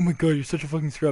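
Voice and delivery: mock angry, mad cursing put-down. Retelling what an opponent said while getting mad: imitating someone getting mad. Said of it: "getting mad at me".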